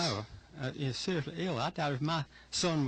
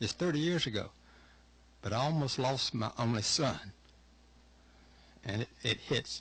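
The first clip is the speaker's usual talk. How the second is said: heartfelt, emotional, faltering, stumbling delivery; 3 semitones lower than usual. Recalling almost losing an only son thirty years ago, emotional. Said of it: "I'm sorry I've got emotional".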